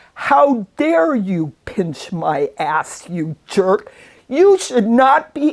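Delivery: mock outraged, indignant outburst, very loud. Speaker quoting their mother confronting a man at a buffet, retelling a very loud voice. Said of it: "saying in very loud voice".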